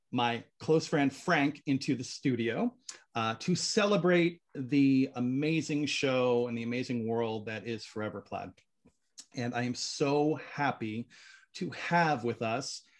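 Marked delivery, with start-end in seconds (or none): 9.3-12.8 choked-up voice, on the verge of tears. Welcoming guests to the show, another speaker says don't cry: choked up, near tears. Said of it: "Don't cry".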